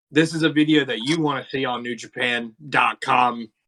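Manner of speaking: normal talking voice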